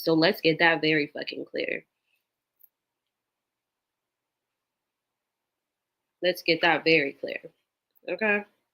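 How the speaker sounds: tearful, speaking through tears, crying. Speaking to an audience who saw her wipe tears, tearful, crying. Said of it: "I didn't mean to cry".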